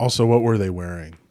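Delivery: sarcastic tone dressed up as mock-serious earnestness. Joking along about a scandal, asking a question: sarcastic. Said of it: "For the record, I'm being sarcastic".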